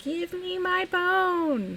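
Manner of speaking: very high, slow tiny voice, bone drawn out. Telling a story, voicing the voice from the closet in a teeny tiny voice. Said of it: "a teeny tiny voice coming from the teeny tiny closet".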